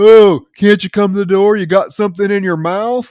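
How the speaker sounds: loud, high, obnoxious, jeering taunting tone. Retelling a film scene where a man taunts at a locked door: imitating an obnoxious, annoying man. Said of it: "the most annoying, obnoxious, uh, misogynistic asshole".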